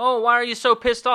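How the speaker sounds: high, loud, condescending taunting tone. Retelling God questioning Cain: mocking condescending God voice.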